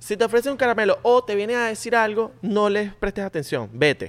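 high-pitched motherly voice. Retelling a mother's warning about strangers: imitating mom's voice. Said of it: "¿Y por esa voz?".

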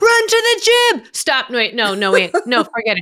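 loud, high-pitched screaming. Retelling a producer screaming during a live shot: imitating someone screaming. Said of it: "he kept screaming, like".

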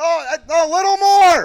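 acted-out yell. Retelling shouting TV directions up to the dads, retelling a yell. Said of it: "You're yelling".

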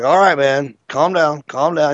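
usual speaking voice

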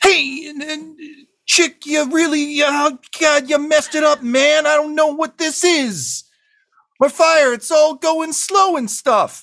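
very high, vaguely trilling voice. Narrating John Travolta blasted into the woods, heard over the trees: John Travolta in vaguely trill voice. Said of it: "in a vaguely trill voice".

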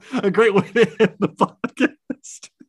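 high, loud, helpless laughter breaking up the words. Podcast host wrapping up the episode with guest Tyler, laughing uncontrollably. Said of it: "I'm laughing uncontrollably now".

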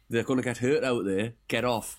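normal talking voice

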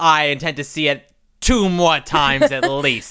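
put-on husky New York accent. Retelling a woman's line from a commercial: imitating husky New York voice.

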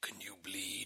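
very quiet, soft, creepy villain voice. Host mocking a movie Batman's voice, doing a Jigsaw voice. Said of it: "why does he sound like Jigsaw from the Saw movies".

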